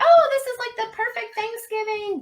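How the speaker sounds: very high put-on online-crowd voice. Retelling what people online say about a film, imitating people on the internet. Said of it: "That's my voice I use for people on the internet".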